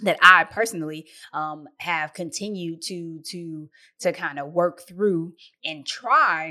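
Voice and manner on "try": try heavily stressed, leaned on hard. Describing continuing to work through things: stress on TRY. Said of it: "emphasis on try".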